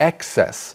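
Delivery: excess with heavy stress on the EX syllable. Discussing where the noun form takes emphasis, stress on first syllable of excess. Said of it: "the emphasis for the noun is on the first syllable".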